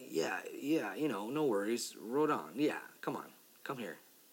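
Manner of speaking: ordinary talk, nothing marked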